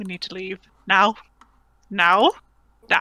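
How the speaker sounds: hushed, whispering voice. Urging the group to leave right now, in character: whispering. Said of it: "I sort of whisper to them".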